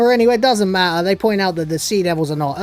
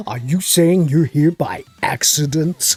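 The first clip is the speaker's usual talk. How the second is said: exaggerated, laid-on-thick, over-the-top American accent; 3 semitones lower than usual. Speaker retells what the guy in the scene said, over-the-top American accent. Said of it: "With the over-the-top American accent".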